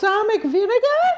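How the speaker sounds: very high-pitched puppet voice. Asked to do the voice, saying a line as Elmo: Elmo voice. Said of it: "You can do the voice".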